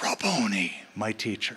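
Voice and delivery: put-on gasp. The speaker retells Mary turning her head to speak to Jesus, retelling a gasp.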